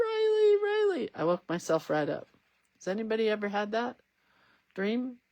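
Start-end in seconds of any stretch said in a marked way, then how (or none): 0.0-1.1 put-on, very high-pitched sobbing, crying wail and scream. Retelling a dream where someone calls out, imitating crying and screaming. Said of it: "Bailey starts crying and screaming".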